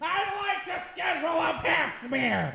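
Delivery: very high pitch, slow, drawn-out voice. Pretending to book a doctor's visit by phone: Gilbert Gottfried voice. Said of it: "Gilbert Gottfried".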